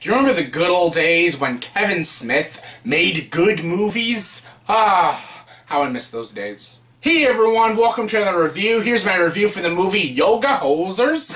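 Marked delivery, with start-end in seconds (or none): 7.0-11.3 bad, exaggerated put-on Canadian accent, pitched up. A reviewer opens a movie review, putting on a bad Canadian accent. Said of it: "That's my Canadian accent".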